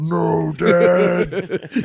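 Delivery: mock hulking man sobbing. Retelling a wrestler whose dad was stolen at a funeral: imitating Big Show crying.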